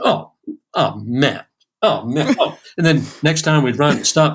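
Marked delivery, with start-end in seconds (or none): 0.0-2.6 very slow groan. Retelling the piano player's reaction to another restart: imitating Omar groaning. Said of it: "it'd be".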